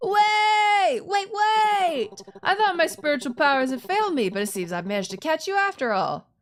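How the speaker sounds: eager, high excited voice, "wait" drawn out. A man skids to a halt in front of the listener, having caught them; excited voice. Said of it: "I'm giving him that excited voice".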